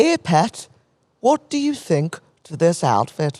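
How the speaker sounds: slow put-on Irish accent with drawn-out words. Retelling what Denise asked her, imitating Denise in an Irish accent. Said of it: "That was Irish".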